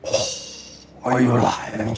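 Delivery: deep, watery voice sounding ancient. Voicing an entity shaking the listeners to wake them, deep, watery voice. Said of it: "A deep, watery voice speaks as if from the depths of time".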